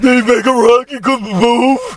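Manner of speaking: very high cartoon creature voice. Repeating the question in a new voice after someone suggests it, Patrick from SpongeBob voice. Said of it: "Patrick from SpongeBob".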